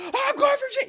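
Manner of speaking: unhinged yelling, very high and very loud. Retelling a meme where a voice actor chases a player: imitating someone yelling. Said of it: "He's like yelling into the mic".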